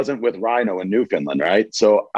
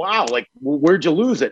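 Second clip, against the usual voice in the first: mock, stunned, shocked disbelief, pitched up; 5 semitones higher than usual. Retelling a friend's reaction to the lost passport: imitating a shocked friend.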